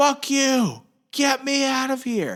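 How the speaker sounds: very high, very slow, drawn-out screaming. Retelling what a soldier trapped in wire yelled: imitating someone screaming. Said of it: "And the dude screams".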